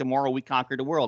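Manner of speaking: ordinary delivery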